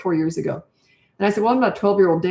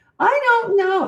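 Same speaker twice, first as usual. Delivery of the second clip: put-on very high, complaining whine like a kid; 14 semitones higher, 3 dB louder than usual. Explaining to a listener what whining sounds like, the speaker demonstrates a whiny voice. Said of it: "like when you talk like this".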